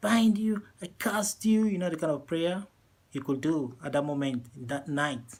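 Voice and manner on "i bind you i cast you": high shouting cried out at full force. Telling a story, the speaker acts out a scared man praying, retelling a shouted prayer. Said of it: "He shouted".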